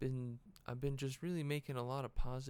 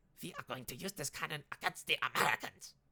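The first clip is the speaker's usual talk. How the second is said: put-on German accent; 3 semitones higher, 4 dB louder than usual. Talking about a cannon, speaker launches into a German accent impression. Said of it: "It's my German impression".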